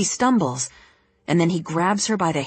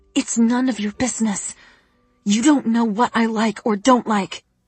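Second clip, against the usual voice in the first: speaking through gritted teeth; 4 semitones higher than usual. Reading a story where a character tells another to stay out: speaking through gritted teeth. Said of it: "speaks through gritted teeth".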